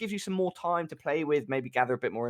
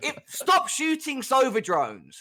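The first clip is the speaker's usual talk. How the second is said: exaggerated, over-the-top rage. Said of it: "about the exaggerated rage".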